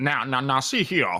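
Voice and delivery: cartoonish Southern drawl. Player demonstrating the stereotypical accent they give a game character, Foghorn Leghorn Southern accent. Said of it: "Foghorn Leghorn style Southern accent".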